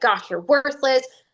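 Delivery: cutting, belittling, harsh, mean tone. Showing how some people talk to themselves, in a mean tone. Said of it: "talk to ourselves in a very mean tone".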